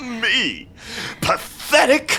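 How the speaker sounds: high cackling laugh woven through the words. Narrator voicing Vullian after he is called pathetic: cackling.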